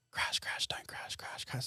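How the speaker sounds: very quiet, hushed, barely-there whisper. Describing the voices heard while driving, acting out a little whisper. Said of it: "It's like a little whisper".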